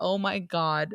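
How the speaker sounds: complete meltdown outburst, totally overwhelmed. Retelling a woman losing it over clothes in front of Billy: imitating a meltdown. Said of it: "She's having a complete meltdown".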